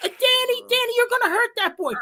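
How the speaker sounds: put-on, high-pitched screaming voice. Recalling a fight as a boy, the speaker imitates his mother on the front step: imitating mom screaming. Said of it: "my mom's on the front step screaming".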